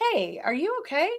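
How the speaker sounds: sincere, genuine, caring, concerned, pitched well up. Advising how to check in on someone, as a genuine, caring question. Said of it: "not like in a sarcastic way, but in a genuine, like".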